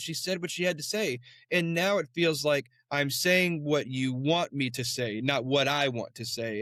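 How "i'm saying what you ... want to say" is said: normal talking voice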